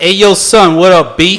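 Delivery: very loud, booming, drawn-out yelling. Describing a date who yells the whole time he speaks: imitating loud talking. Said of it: "He just talks like loud".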